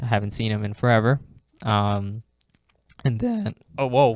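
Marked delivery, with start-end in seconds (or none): 1.6-4.1 sudden voice crack breaking whoa. A guest naming his top three players, mid-answer; voice cracking. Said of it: "voice crack".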